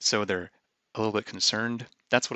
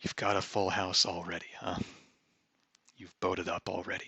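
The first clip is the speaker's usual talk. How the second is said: mock mumbling under breath, quieter; 2 semitones lower, 6 dB quieter than usual. Retelling what the opponent muttered during a long think: imitating someone mumbling under breath. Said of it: "they mumble to themselves under their breath".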